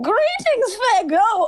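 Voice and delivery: very high-pitched, loud voice. Voicing a goblin, slipping into the wrong voice: Mister Light voice. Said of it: "That was Mister Light".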